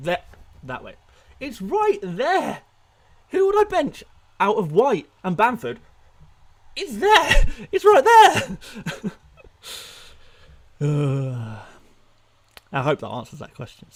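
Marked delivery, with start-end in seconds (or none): 1.4-13.9 loud, swooping, mocking sarcasm with drawn-out uh. Answering a viewer's question about whom to bench: sarcastic. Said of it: "Sorry for the sarcasm".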